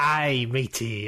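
put-on pirate voice. Reacting to the other speaker's remark: pirate voice. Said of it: "Getting real piratey all of a sudden".

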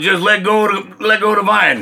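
mock, easy, relaxed calling out. Telling a joke, voicing God calling down from a cloud: hollering down. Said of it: "And God hollers down from the cloud".

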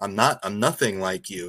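normal talking voice

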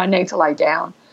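plain

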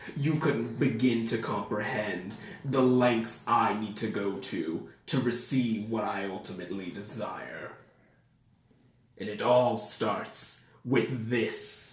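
evil villain character voice. Voicing a villain who holds up a chaos emerald: villain character voice. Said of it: "I said that in that voice".

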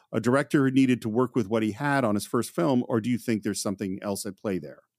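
ordinary talk, nothing marked

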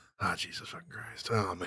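very hushed, breathy, whispered muttering under the breath. Retelling how Kevin reacts to seeing himself on video: imitating Kevin looking at himself. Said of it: "he looks at himself, he goes".

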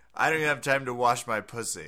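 ordinary talk

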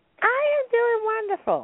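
very high voice, spoken through a smile. Greeting the co-host at the start of the show, smiling voice. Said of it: "You sound like you're smiling".

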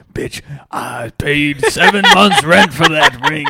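slow, put-on Southern male voice, scolding tone.

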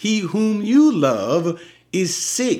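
emotional pleading, slow and high.

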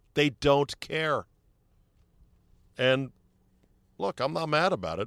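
really mad, fed-up, angry-sounding voice. Complaining that they don't care: sounding really mad. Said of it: "You sound really mad".

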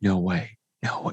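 stunned, hushed, disbelieving whisper. Recounting a guy in front of them reacting to Spider-Man, imitating someone whispering. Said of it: "He's like whispering it".

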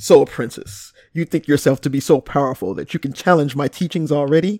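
dropped, low put-on register. Reading out someone's message in his voice: put-on deep voice. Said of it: "I have to go in his deep voice".

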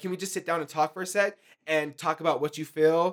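ordinary talk

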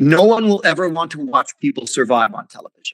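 mock haughty, condescending, dismissive talking-down tone. Retelling what a TV channel head said to the speaker, mock-condescending. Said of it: "Very condescendingly".

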